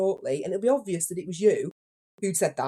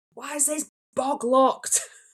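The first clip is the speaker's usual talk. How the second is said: raised, higher shouting; 7 semitones higher than usual. Retelling a random guy banging on the toilet door, imitating a stranger's shout. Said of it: "starts banging on the door shouting".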